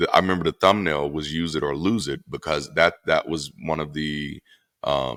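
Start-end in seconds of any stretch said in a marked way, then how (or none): none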